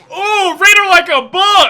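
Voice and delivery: shouting. During a group argument about a girl's parents, yelling. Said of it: "Sorry for yelling".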